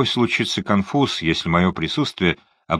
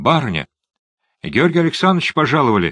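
scared, frightened, high-pitched housemaid's voice; 7 semitones higher than usual. A maid calls to her mistress after a knock at the door, frightened voice. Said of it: "раздался испуганный голос горничной".

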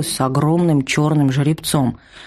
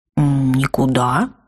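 startled, caught off guard; 2 semitones lower than usual. A young lad answers a woman's question through her gritted teeth, taken aback. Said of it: "оторопил паренек".

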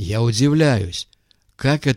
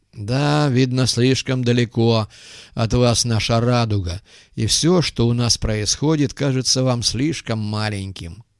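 ordinary delivery

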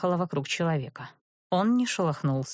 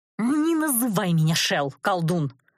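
words growled out, growling; 2 semitones higher, 3 dB louder than usual. A woman snaps back at the sorcerer who called her Shel, growling. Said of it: "Сорвалась я в рычание".

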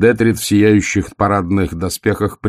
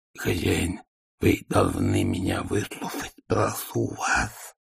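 rough, very quiet, hushed, rasping wheeze; 10 dB quieter than usual. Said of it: "сипел Игорь".

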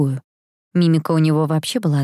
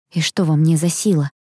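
plain reading voice

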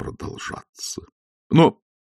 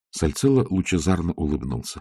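ordinary delivery, nothing marked

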